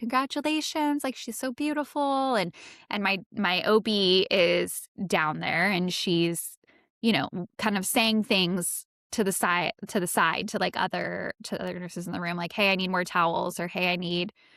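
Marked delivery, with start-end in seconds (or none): 0.0-2.4 very nurturing caregiver voice, pitched up. Retell how your nurse reassured you during stitching, imitating a very nurturing nurse tone. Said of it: "very nurturing".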